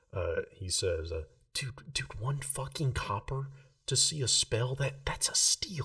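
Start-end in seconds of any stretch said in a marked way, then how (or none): 1.5-5.8 loud stage whisper, meant to be overheard. Game narrator voices Rill leaning over to Max, Rill's loud whisper. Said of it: "in that same loud whispering".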